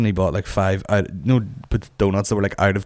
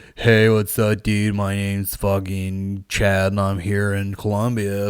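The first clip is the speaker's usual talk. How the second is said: slow, sarcastic, too-cool hipster host voice. Retelling a reporter's intro: imitating a hipster reporter. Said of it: "hipster as fuck, they were like".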